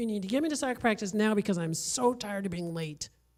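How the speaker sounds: acted bossy kid voice, harsh and demanding. Guest acts out a child demanding a ride to soccer practice, mimicking a kid's harsh demand. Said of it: "they come up to you with a harsh tone of voice".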